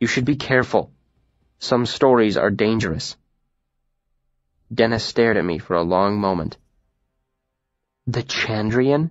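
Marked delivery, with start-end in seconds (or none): 8.1-9.1 in disbelief, incredulous, disbelieving. Warned that some stories are dangerous, she asks incredulously. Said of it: "She said incredulously".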